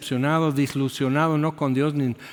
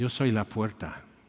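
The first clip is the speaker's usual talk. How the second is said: put-on sad little voice, quieter; 4 semitones lower, 6 dB quieter than usual. Recounting hearing a little voice while facing a wall: imitating a sad little voice. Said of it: "Pero tan triste que lo dice".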